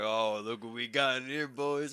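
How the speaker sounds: wild, rowdy, drawn-out taunting jeer. Retelling how the holding cell reacted to a painted toenail, imitating rowdy jeering. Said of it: "they fucking went wild".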